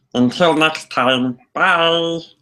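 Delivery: high-pitched cartoon alien voice. A host is told to end the show with that voice: Stitch voice. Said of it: "end the show, [name], with that voice".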